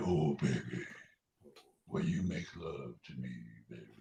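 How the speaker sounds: very deep, very soft, hushed murmur.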